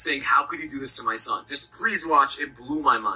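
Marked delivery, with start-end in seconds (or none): none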